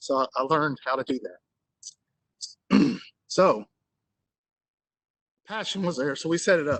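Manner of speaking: voice catching, choked up with emotion. Telling how they came to help people in need, getting emotional. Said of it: "I'm getting emotional".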